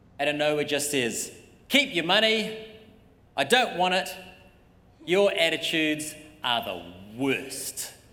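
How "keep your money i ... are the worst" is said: slow, drawn-out, heavenly voice of god. Imagining a voice from heaven interrupting the offering: booming voice from heaven. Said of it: "this big booming voice from heaven".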